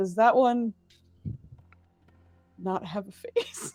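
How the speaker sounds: muttered whisper, trailing off. A player voices her character as she rolls again: whispered under her breath. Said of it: "she's gonna whisper under her breath".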